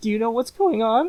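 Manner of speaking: very high, rushed, fast, nervous, jittery delivery. Retelling a TV battle scene, imitating nervous prissy Octavian. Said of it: "a little bit of a nervous guy, prissy a little bit".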